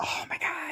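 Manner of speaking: stunned, awed, unvoiced whisper.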